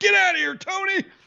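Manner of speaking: very high, rough, ragged put-on screech. Acting out how a player treats reporters, do it imitating Baker screaming. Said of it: "Baker's like screaming at reporters".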